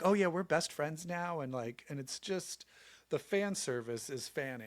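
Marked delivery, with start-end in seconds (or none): none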